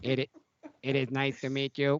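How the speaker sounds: imitated electronic larynx voice. Voicing a character introducing himself, Cookie Roberts electrolarynx voice. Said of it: "electric transmitter up to their like lower neck to transmit sound".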